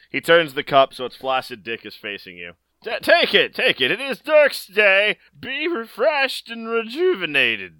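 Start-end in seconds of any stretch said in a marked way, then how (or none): 2.9-7.6 put-on very high, sing-song, swooping old man voice. Game master voicing a man handing a cup to the players: old man character voice. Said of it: "you see the withered husk of an old man. ... "Hey, bro!".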